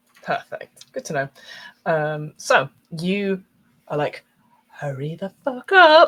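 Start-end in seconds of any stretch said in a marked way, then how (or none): 4.7-6.0 very loud, high, projected stage whisper. Voicing a player character's line in the game: stage whisper. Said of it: "very much like a stage whisper".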